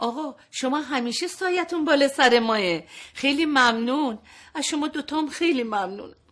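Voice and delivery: choked-up voice, lump in the throat, holding back tears. Thanking the father for agreeing to the job: choked up, holding back tears.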